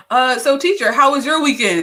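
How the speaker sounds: put-on high child voice. Teasing another speaker who keeps knitting: imitating a kid stalling a teacher. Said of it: "You sound like a kid doing last minute homework".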